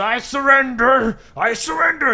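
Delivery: rough, very high, loud gruff dwarf voice. The storyteller voices a dwarf hiding behind a well, gruff dwarf voice. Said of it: "the gruff ... it sounds like a dwarf".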